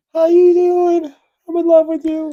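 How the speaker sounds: very high, loud put-on female voice. Speaker jokes about a series where they play the woman; put-on woman's voice. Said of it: "I play the woman".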